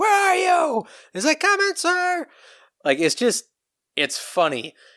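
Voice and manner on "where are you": very high, high-pitched hollering scream. Describing a Columbo scene, doing his boss screaming at him: imitating a screaming boss. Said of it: "his boss is screaming at him like".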